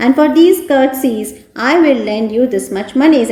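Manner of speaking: plain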